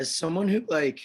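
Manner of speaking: voice cracking mid-phrase, high and loud. Starting a question to someone who follows social media trends, voice cracking. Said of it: "my voice just cracked".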